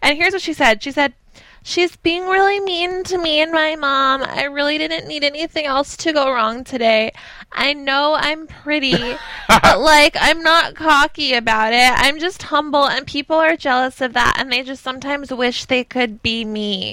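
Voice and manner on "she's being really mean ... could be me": put-on childish baby-talk voice all the way through. Quoting what a 13-year-old said in a professional setting, imitate her baby talk. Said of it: "the baby talk at 13 years old".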